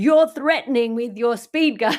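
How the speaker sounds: put-on loud, menacing, intimidating accusing tone. Retelling what a driver said from her SUV: imitating an intimidating accusation. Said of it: "she's intimidating down at me and she's going".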